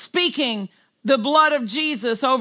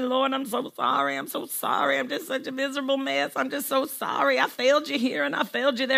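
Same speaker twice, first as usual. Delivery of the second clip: put-on groaning, sorry-for-myself whine; 6 dB quieter than usual. Acting out a sorry prayer to the lord: mock moaning and groaning. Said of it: "come in moaning and groaning".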